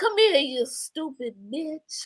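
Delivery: real smooth, real soft, quiet-storm style voice. Repeating how he said it, imitating a smooth, soft voice. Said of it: "he say it in that voice".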